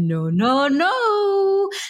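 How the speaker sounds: light, teasing, high, drawn-out no-no-no. Retelling telling a toddler no without screaming, the speaker retells a playful no. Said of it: "And I made it a little fun".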